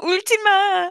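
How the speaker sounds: high-pitched, tearful Korean with a sob. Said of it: "In Korean, you would say".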